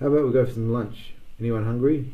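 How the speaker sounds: plain reading voice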